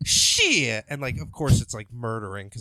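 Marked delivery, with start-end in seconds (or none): 0.0-0.8 loud delivery in a different voice.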